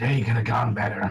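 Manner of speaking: character voice, sighing through the nose. Told to come over and show his face, Magnus answers, Magnus's wheezing sigh. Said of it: "a sort of wheezing sigh through his nose".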